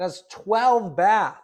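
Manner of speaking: booming, slow, drawn-out, high-pitched yelling. Reacting to a house's features, yelling. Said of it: "Sorry, I'm yelling".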